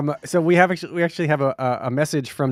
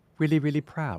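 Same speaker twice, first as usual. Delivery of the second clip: clumsy, bad put-on British accent; 8 dB quieter than usual. Congratulating David, put on a bad British accent. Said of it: "in the best accent I can't do".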